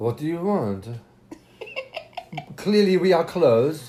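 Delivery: mocking grumpy French accent, loud and high. Retelling what a grumpy Frenchman shouted from a balcony: imitating a grumpy Frenchman. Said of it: "this grumpy Frenchman comes out".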